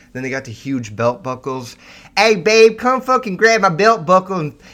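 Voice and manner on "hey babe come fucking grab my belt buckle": mocking put-on voice, much louder and higher. Mocking people with huge belt buckles, doing their voice: imitating these belt-buckle types. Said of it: "I just can't do the fucking voice anymore".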